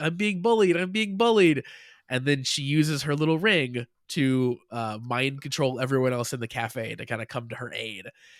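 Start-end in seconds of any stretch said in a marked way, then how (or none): 0.0-1.6 high, play-acted, mocking, taunting yell. Retelling how the young girl yells out at Kudo: imitating a mocking yell. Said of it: "basically starts to yell out kinda mockingly".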